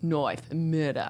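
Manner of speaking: horrible Australian accent. Two speakers trying Australian accents: horrible Australian accent. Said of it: "our horrible Australian accents".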